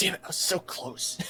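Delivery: muttering under breath. Voicing a skeleton character who barely missed out: muttering under his breath. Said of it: "muttering under his breath".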